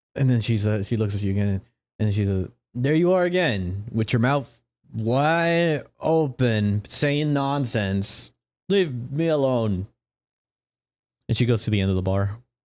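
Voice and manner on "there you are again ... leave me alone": put-on very slow, slurred, wide stretched tipsy drunk drawl. Voicing a drunk character snapping at a player: drunk character voice.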